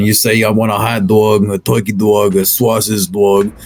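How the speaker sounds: put-on Brooklyn accent. Explaining how people order food in brooklyn, the speaker demonstrates the brooklyn accent. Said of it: "the Brooklyn accent".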